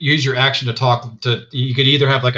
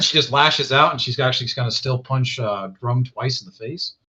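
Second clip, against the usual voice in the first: ordinary talk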